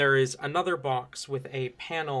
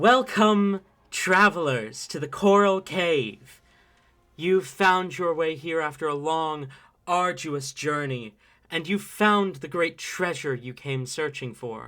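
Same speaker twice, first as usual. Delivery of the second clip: echoey voice, higher and louder; 3 semitones higher, 5 dB louder than usual. Voicing a recorded cave announcement greeting the players: echoing voice. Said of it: "a voice, uh, kind of echo".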